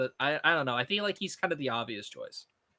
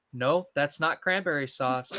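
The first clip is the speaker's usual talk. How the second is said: put-on patronizing yet serious tone. Retelling a line from a slasher movie: imitating a patronizing yet serious tone. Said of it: "patronizing yet serious way".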